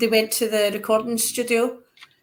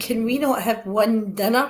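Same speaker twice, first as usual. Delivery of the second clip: usual speaking voice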